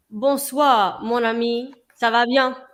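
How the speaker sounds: slow, unhurried put-on French accent. Reading a viewer's chat comment aloud in French: put-on French accent. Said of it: "Was that a good accent?".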